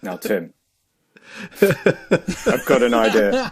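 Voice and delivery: very slow, grave, earnest, overly serious delivery. Mimicking how another speaker impersonates him, a lot more serious. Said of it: "I love Timmy's impression of me".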